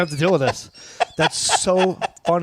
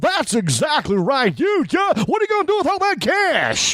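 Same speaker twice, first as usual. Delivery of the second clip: very high, on-air radio DJ patter; 12 semitones higher than usual. Retelling a prank call, imitating a local radio dj. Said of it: "I could sound like a certain D J".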